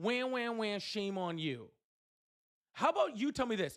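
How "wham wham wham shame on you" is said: petulant, whiny, whining voice. Mocking an opponent's reply in a debate: mock whining imitation. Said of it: "you responded to that intellectual point with".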